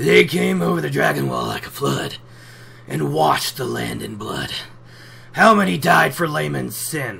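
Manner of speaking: angry, gruff, rough-edged voice. Discussing the Aiel, doing Tam's fever voice, quick and gruff. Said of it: "let's see how I can do with a fever voice ... quick and angry and gruff".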